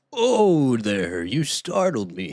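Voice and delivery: loud, booming, swooping wizard voice. After admitting it was their best attempt, trying another line: Gandalf impression. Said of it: "my best impression of making a Gandalf voice".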